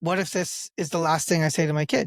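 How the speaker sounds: normal talking voice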